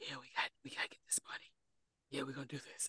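hushed, raspy, breathy near-whisper. Speaker imitating a guy from the movie, in a raspy voice. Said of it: "he'd be rasping with his voice".

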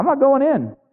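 mock pouting, livid, sulky voice pitched very high. Retelling an older brother refusing to go in: acted angry pouting. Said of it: "he's pouting. He's angry. ... he's livid".

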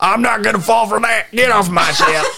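put-on high Southern accent. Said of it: "This is, like, Southern".

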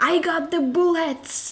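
high, slow shout. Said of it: "then he shouts".

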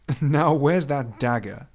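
with some amusement. Beauvallet speaks to a flustered woman who clenches her hands, amused. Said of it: "watching her in some amusement".

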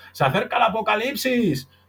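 put-on very high, crazy-sounding old man shout. Comparing oneself to a crazy old man with a cart: imitating a crazy old man shouting. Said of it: "va gritando".

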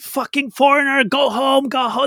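play-acted, high, wild, unhinged screaming. Retelling a man on a train platform, imitating a man screaming. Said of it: "he's screaming from the end of the platform".

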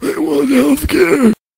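very high-pitched put-on old man voice, sounding ancient. Joking about what Bernie Sanders will say, in a Bernie Sanders voice. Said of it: "Why did that sound like him?".

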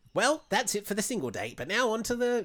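put-on failed New Zealand accent. Play a different person doing a show's voiceover after the single date, in a bad new zealand accent. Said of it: "I can't obviously do a New Zealand accent".

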